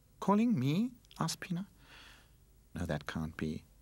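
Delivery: plain reading voice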